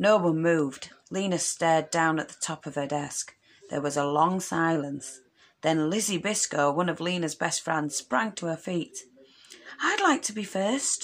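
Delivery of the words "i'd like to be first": airy, breathless, out-of-breath high voice. A girl springs to her feet in class to volunteer first: breathless high voice. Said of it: "she said in her breathless high voice".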